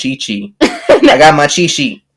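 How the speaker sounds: put-on slow, swooping, thick Louisiana accent. Retelling a man who handed out a cheat sheet, in a deep Louisiana accent. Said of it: "the deep Louisiana accent".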